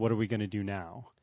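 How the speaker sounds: ordinary delivery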